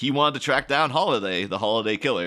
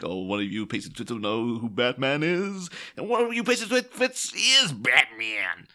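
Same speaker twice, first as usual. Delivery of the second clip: weird, wacky, all-over-the-place, unpredictable delivery. Discussing an actor's line in a Batman film: weird Tommy Lee Jones delivery. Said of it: "he says it in a really weird way".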